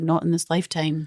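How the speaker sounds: badly done, terrible put-on Irish accent. Retelling a character's reply when the two first meet: terrible Irish accent. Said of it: "That's a terrible Irish accent".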